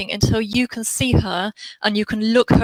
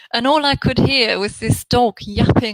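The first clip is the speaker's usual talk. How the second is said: normal talking voice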